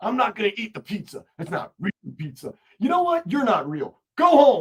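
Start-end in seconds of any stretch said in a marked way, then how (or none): 0.0-2.5 put-on New York accent, griping and complaining. Doing an impression of New Yorkers who winter in Florida: imitating complaining New Yorkers. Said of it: "my impression of New Yorkers".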